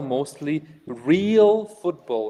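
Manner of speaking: real stressed, leaned on and slowed down.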